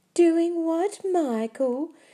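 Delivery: very high, loud, mocking girlish voice. A boy grabbed by the neck taunts Michael: high girlish voice. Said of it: "He said in a high girlish voice".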